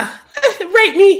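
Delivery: put-on loud, shrill, very high-pitched squeaky girl's voice. Retelling what a girl said, the speaker quotes her by imitating a squeaky voice. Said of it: "she had a rather squeaky voice".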